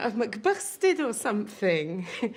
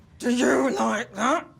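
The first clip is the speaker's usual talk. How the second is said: hammy, overacted put-on big-man voice; 4 dB louder than usual. Flirting with Clive, the speaker checks whether he likes it, Big Daddy voice. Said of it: "Did my Big Daddy voice".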